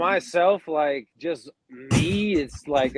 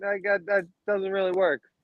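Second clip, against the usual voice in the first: ordinary delivery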